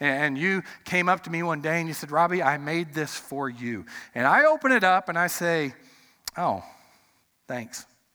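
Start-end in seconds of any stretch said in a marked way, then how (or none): 6.4-7.8 acted very low, indifferent, unenthusiastic delivery. Demonstrating receiving a homemade gift with a flat, unenthusiastic thanks. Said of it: "Am I excited about that? ... No, you can tell by my tone".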